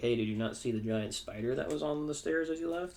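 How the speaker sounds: ordinary delivery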